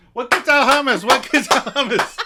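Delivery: very high-pitched, shrill, loud, repeated yelling. Retelling a TV scene where a character yells while clapping: imitating Ross yelling. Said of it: "he starts yelling".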